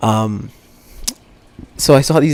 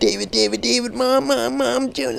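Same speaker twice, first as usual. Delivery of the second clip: high, crying, panicked wail. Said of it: "He just started crying".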